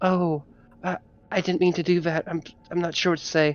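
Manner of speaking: soft, gentle, mild-mannered voice. Voicing a character who is meant to sound soft, in a soft voice. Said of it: "this person is meant to have a kind of soft voice".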